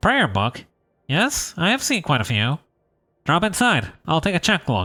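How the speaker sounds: bookish, nerdy, geeky character voice. Voicing a bookbinder behind a door in a game: nerdy voice. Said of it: "give this guy a nerdy voice".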